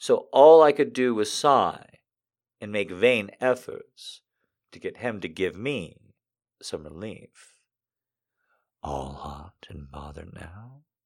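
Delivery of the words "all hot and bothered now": very soft, low, hushed murmur under the breath. A man teases the woman he is touching: murmured. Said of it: "He murmured".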